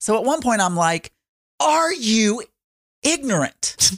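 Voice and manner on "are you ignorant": high-pitched yelling at full force. Retelling a family argument, the speaker repeats what they yelled; retelling a yell. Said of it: "I'm like yelling at the top of my lungs".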